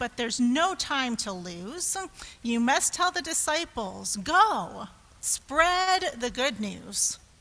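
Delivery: ordinary delivery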